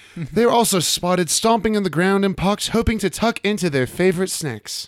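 classy, dandified British accent. Asked to redo the last sentence in an accent, British dandy accent. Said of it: "Can you do that in an accent?".

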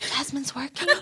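put-on hushed, soft, careful little kid's whisper. Retelling how the niece repeated the words: retelling the niece's whisper. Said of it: "And she starts whispering".

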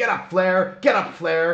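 high-pitched yell. Retelling a wrestler yelling while pounding on his opponent: imitating someone yelling. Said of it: "he's yelling".

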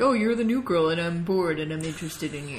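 put-on low teenage boy voice. Discussing the teens' relationship, doing an Archie impression. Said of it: "I love your Archie impression".

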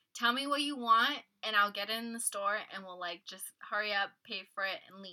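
ordinary delivery

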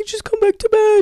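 put-on sad pleading tone. Retelling begging him outside to come back to bed, imitating sad pleading. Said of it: "like so sad".

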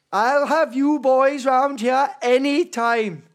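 put-on Welsh valleys accent, high and loud. Challenging listeners to guess where they are from, the speaker does a welsh accent. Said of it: "That's my Welsh".

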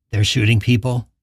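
plain

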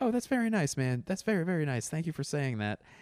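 high-pitched, gracious voice. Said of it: "And he was like".

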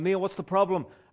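loud, high hollered shout. Retelling calling out of a car door to an angry man: retelling own shout. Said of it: "I'm shouting out the door".

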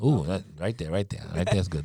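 soft, hushed, atmospheric murmur.

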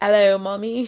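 put-on British accent. Trading phrases with another speaker, the speaker tries one of her few lines in a British accent. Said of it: "I can only say like three things in a British accent".

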